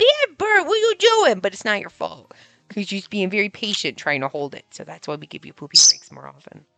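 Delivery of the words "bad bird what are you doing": very high, loud scolding shout. Acting out scolding a pet bird for pooping: imitating own yelling at a bird. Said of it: "I would yell at you".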